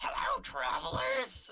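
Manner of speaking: tiny goblin voice, very high, raspy and creaky. Voicing a tiny goblin greeting the travelers: tiny goblin voice. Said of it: "this tiny goblin comes up towards you".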